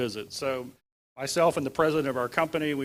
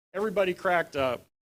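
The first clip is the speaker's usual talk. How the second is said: ordinary delivery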